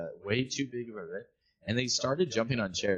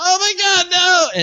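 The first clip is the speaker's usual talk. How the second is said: put-on near-tearful pleading, higher and louder; 17 dB louder than usual. Retelling how a mom reacted to a fall: imitating someone almost crying. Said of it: "she's borderline crying".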